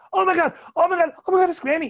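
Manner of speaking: put-on very high, very loud childlike shrieking. Retelling two longtime whale watchers seeing Granny breach, imitating screaming like little kids. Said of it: "they're screaming like little kids".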